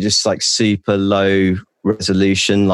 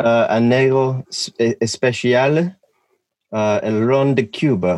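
clumsy fake Spanish accent, very slow and drawn out; 4 semitones higher than usual. Asked what he is drinking, naming the drink: bad Spanish accent. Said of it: "That's not a very good Spanish or South American accent".

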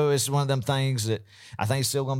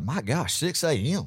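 ordinary talk

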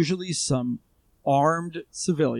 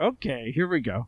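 ordinary talk

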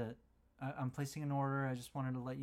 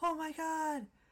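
put-on shrill, very high-pitched shriek; 4 dB louder than usual. Speaker retells him seeing a mailed present brought out, imitating his scream. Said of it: "he like screams like".

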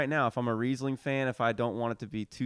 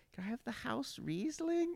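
put-on very high, soft, dainty little-grandma voice; 13 semitones higher, 8 dB quieter than usual. Retelling grandma ordering at dinner one time, in her little grandma voice. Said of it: "in her little grandma voice".

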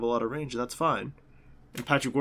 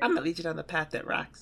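little, high, squeaky cartoon voice; 4 semitones higher, 3 dB quieter than usual. Quoting a line from Emperor's New Groove, in a little squeaky Kronk voice. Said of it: "he said in a little squeaky voice".

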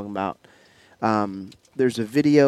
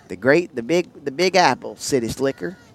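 attempted, put-on Southern country accent; 3 semitones higher, 3 dB louder than usual. Speaker tries out Southern slang, asking if it sounds country: country accent. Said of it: "does that sound kinda country?".

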